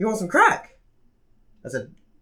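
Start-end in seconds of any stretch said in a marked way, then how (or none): 0.0-0.7 calm, offhand, nonchalant, casual, pitched up. Retelling a stranger's offer on the street: imitating a calm, nonchalant offer. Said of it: "so calmly and nonchalantly just asked me".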